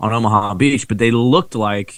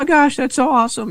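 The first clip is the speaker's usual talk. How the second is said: mock, very high, excited gushing squeal. Retelling a friend meeting a fighter pilot: imitating someone getting excited. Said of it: "Tammy gets all nuts".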